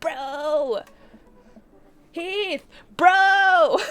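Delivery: very loud, high dude-bro voice, "bro" stretched. Retelling footsteps coming up behind them on the walk home; Craig's bro voice. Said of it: "like, bro voice I can".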